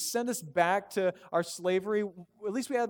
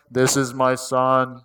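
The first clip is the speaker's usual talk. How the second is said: booming, very slow narrator voice, dragging every word; 6 semitones lower, 11 dB louder than usual. Retelling the voice from the heavens, Morgan Freeman voice. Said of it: "like in a Morgan Freeman voice".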